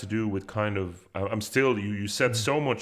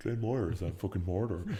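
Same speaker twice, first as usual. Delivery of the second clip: mimicked posh Dublin dad voice, quieter; 2 semitones lower, 6 dB quieter than usual. Quoting a comedy skit's D4 dad character: imitating a D4 dad. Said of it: "a skit where they have this D four dad".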